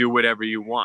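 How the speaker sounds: usual speaking voice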